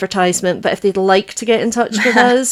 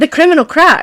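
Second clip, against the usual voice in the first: rising volume, higher and louder; 8 semitones higher, 4 dB louder than usual. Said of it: "we get progressively louder".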